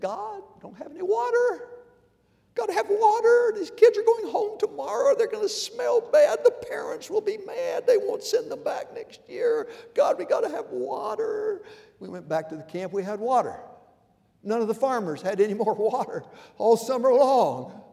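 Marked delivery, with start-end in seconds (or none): 0.0-11.6 tiny, very high, squeaky voice. Retelling what a man said at morning prayer at the camp, little squeaky voice. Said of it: "in his little squeaky voice".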